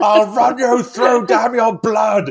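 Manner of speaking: high, loud, slow mock scream. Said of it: "All of them just scream".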